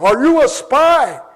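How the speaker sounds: very loud, booming, slow put-on heavily accented English. Retelling a stranger leaning in close on a dark trolley bus, heavily accented english. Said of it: "heavily accented English".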